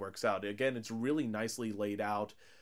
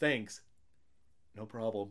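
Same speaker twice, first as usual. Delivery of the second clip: put-on dry, direct, flat deadpan delivery. Retelling a film scene after a character is finally shot; imitating a dry, direct reply. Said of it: "very dry and direct there".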